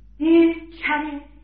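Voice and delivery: unhurried, slow pace.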